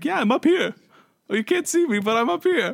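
very high-pitched speaking. Retelling what Tony said from his spy nest: imitating Tony. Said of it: "He's like".

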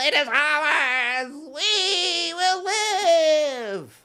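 screaming, yelling. Voicing the gnome's mad father screaming unto the chapel: screaming. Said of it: "screaming unto the chapel".

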